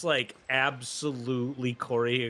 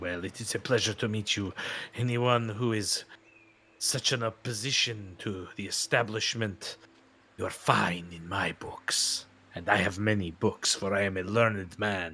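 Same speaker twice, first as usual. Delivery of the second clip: mock pirate character voice; 4 semitones lower than usual. Voicing a pirate NPC who greets the party: pirate NPC voice. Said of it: "But it's a pirate bit".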